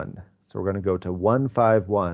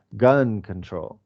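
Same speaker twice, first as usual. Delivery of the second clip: gun stressed, control dropped low. Describing how someone said gun control, stress on gun. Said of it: "he put the stress on the gun".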